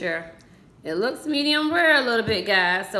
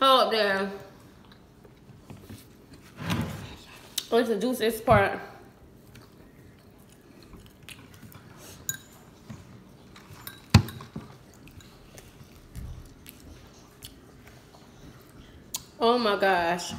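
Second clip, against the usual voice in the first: talking while chewing, mouth full, quieter; 5 dB quieter than usual. Talking to viewers while eating steak, talking while chewing meat. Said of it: "I barely can talk eating this meat".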